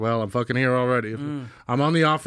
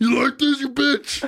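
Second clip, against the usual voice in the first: put-on tough-guy trash talk, higher; 12 semitones higher than usual. Showing how he talks to his belly in the mirror: mock tough talk. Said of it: "that's my, uh, tough talk".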